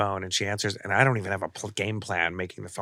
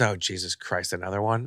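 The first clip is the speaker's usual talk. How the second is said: ordinary talk, nothing marked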